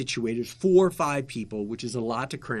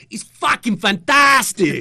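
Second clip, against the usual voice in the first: put-on distinct German accent, very high and loud; 11 semitones higher, 11 dB louder than usual. Retelling a guest's answer on live television: imitating a german accent. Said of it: "in his distinctly German accent".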